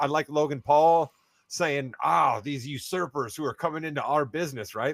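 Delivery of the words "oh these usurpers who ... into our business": exaggerated sarcastic tone. Retell what Logan Paul said about people coming into the business, imitating Logan Paul dripping with sarcasm. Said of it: "the sarcasm dripping off of that".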